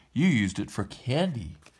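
ordinary delivery

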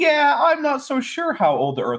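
high, slow, evasive mock voice.

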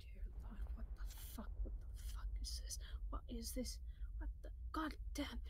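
fast, hushed, whispered running grumble under the breath. Describing a man surrounded by bugs and grubs, the speaker imitates muttering under his breath. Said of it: "he's like muttering under his breath".

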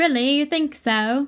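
put-on British accent. Reacting to a movie trailer, slipping into a put-on British accent. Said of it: "Are you doing a British accent?".

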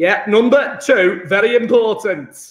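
put-on Yorkshire accent. Stressing that number 2 matters, slipping into a yorkshire accent. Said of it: "Don't know why I gone Yorkshire".

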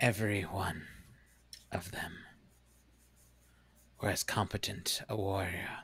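resonant, echoing, formal and solemn stone-guardian voice. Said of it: "You now see as they uncurl themselves from this almost boulder-like form, these two creatures, probably about 6 feet tall each, large, broad shoulders, standing there, stand atop this pile of boulders in front of you. ... And a kind of echoing, booming voice kind of chimes out".

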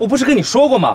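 ordinary delivery

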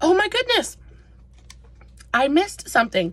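talking with mouth full. While trying a chocolate caramel treat, the speaker talks with mouth full. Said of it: "Let me swallow".

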